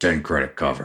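rough, gruff bouncer voice. In a role-play game, the bouncer looks at the player and speaks, gruff bouncer voice. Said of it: "sort of in a gruff voice says".

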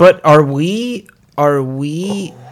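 every word drawn out, far too slow.

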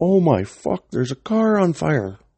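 very high, shrill screaming cry. Telling a story about walking out with drinks, imitating somebody screaming. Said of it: "somebody screams".

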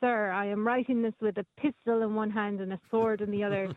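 usual speaking voice

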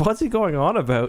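baffled, wondering tone. Telling a story, the speaker quotes Kelsey in the kitchen: imitating Kelsey, puzzled question. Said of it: "she's like".

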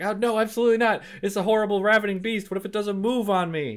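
play-acted very high, loud, frantic shriek. Retelling how a woman reacted to being offered a Starly, imitating a shriek. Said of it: "And she shrieks and like freaks out".

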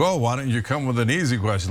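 ordinary talk

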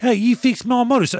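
very high, loud, loosely done British soldier voice. Retelling a movie scene, imitating a British soldier: inaccurate impression of a British soldier. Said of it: "not an accurate impression".

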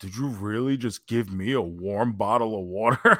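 put-on venomous, spiteful tone. Retelling how a wrestler reacted to a warm bottle of water: imitating a venomous question. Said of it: "with all the venom in his eyes".

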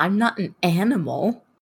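affronted, indignant cat voice with wounded dignity. Voicing a cat who wants to cook its fish: offended cat. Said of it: "He looks offended".

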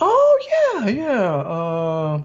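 high sing-song sarcastic tone, uh stretched out. Recounting a scene where Marge offers to stretch the bonus, imitating Homer's high sarcasm. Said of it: "that high pitch you get when you're just being sarcastic".

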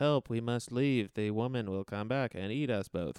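dead, flat, level monotone delivery. Retelling a movie scene, quoting a monotone actor's line: flat monotone. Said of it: "because he's literally that monotone".

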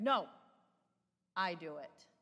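mock-authoritative put-on toddler voice. Retelling a toddler refusing his mom's help, in a mock-authoritative toddler voice. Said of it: "in his most authoritative toddler voice".

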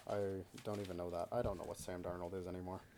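glum, downcast, sad, low and soft voice. Talking football with another speaker, sounding sad. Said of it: "You sound so sad".

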